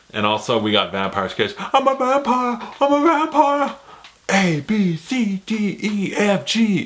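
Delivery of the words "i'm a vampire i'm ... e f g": terrible exaggerated actor voice, very high, squeaky, drawn out. Recalling a vampire sketch, doing a Nicolas Cage impression. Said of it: "terrible Nicolas Cage impressions".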